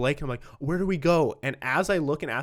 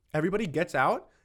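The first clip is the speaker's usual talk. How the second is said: plain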